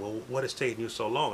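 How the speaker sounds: ordinary talk, nothing marked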